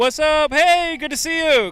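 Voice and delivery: very loud, high-pitched yelling. Host greets someone arriving, yelling into the mic. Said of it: "I'm yelling into the mic".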